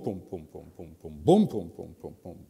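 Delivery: low, pounding boom with heavy stress on every beat.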